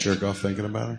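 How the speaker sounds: sheepish, hushed, embarrassed half-whisper. Repeating a question the listener didn't catch, half-whispering. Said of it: "Why are you whispering?".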